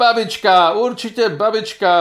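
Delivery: exclaiming. Asked who hid it in time, a child cries out, exclaiming. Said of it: "vykřikl jeník".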